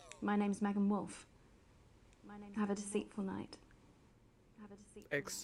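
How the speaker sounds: affected, put-on upper-class posh voice. Signing off a broadcast in a put-on posh gobshite voice. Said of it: "this posh gobshite's voice".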